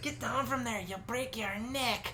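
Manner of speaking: put-on very high botched German accent, sounding Irish. Speaker recalls being told off for climbing a wall at six, in a botched German accent. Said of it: "In her German accent, not this Irish one".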